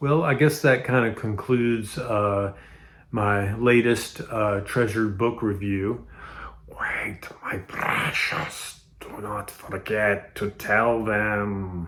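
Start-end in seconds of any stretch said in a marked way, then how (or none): 6.7-11.9 slow, breathy, bad creature voice, "them" stretched out. Concluding your book review, interrupt yourself with a really bad Gollum impression. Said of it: "That was a really bad Gollum impression".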